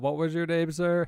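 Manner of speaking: normal talking voice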